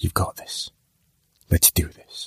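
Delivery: hushed, half-whispered mutter under the breath. A man reaching up for his bags mutters to himself: muttering to himself. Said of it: "he muttered to himself".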